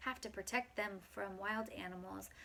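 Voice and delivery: plain reading voice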